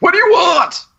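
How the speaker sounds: very high shrieked scream in a character voice. Playing a character who spots sneaking figures: screaming in character. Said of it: "I'm gonna scream".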